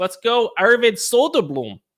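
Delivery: attempted Swedish accent. Cheering on a player by name after giving a hockey betting pick: best attempt at swedish accent. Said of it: "I tried to say it in my the best Swedish accent I could".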